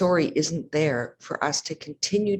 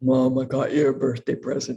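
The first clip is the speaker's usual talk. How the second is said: really deep, low-pitched voice; 3 semitones lower than usual. Mother retelling her son coming into the kitchen: really deep voice. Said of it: "really deep voice".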